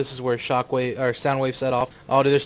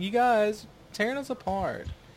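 mock timid, meek, pitched up, no bravado; 9 semitones higher, 4 dB quieter than usual. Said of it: "nothing bravado about it at all".

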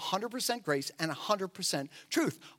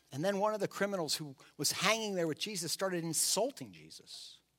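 usual speaking voice

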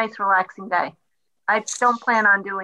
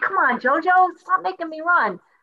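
mock very high, exasperated, irritated shout; 9 semitones higher than usual. Retelling what they shout at their partner when made to run: retelling a yell. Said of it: "it's usually JoJo I'm yelling at".

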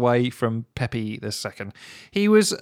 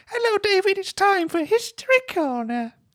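put-on very high-pitched aged old man host voice. Acting out an old man greeting david: very high old man voice. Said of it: "he's got a, a very high voice 'cause he's very old".

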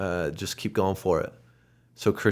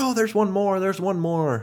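put-on very high-pitched, shrill old man's shout; 13 semitones higher, 4 dB louder than usual. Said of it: "he starts yelling".

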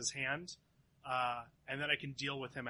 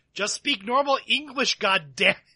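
very loud, high-pitched yelling; 8 semitones higher, 16 dB louder than usual. In a roleplay, the speaker's character yells at another character: yelling. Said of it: "So I yell at him".

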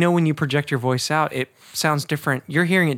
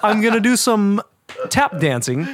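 playful, teasing voice pushed higher in pitch; 6 semitones higher, 3 dB louder than usual. Joking about a guest, doing a Christopher Walken impression. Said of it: "I'm sorry for making fun of your voice".

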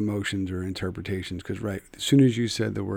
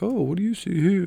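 very high, overdone, exaggerated posh accent; 11 semitones higher, 4 dB louder than usual. Imitating how people with a posh accent talk, posh accent. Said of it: "people have a posh accent and they talk like".

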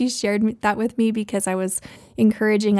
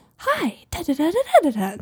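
put-on very slow, super-cheerful, high, swooping, sing-song kids-host voice; 7 semitones higher than usual. Describing a YouTube kids host, the speaker imitates Blippi's super-cheerful voice. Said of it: "he's just like super cheerful".

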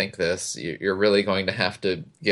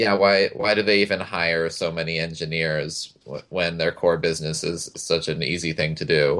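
usual speaking voice

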